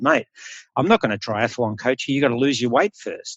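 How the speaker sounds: ordinary delivery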